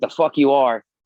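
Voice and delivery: loud, defiant, sharply snapped tone.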